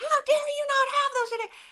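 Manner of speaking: very high-pitched, irate, outraged yell. Speaker retells a customer at the counter yelling at them, imitating a customer yelling. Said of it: "She starts yelling at me, cussing at me".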